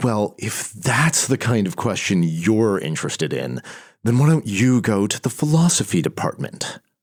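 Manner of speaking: play-acted contemptuous tone, oozing disdain. Speaker retelling an angry man's dismissive reply to her question, mimicking dripping disdain. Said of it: "dripping with disdain".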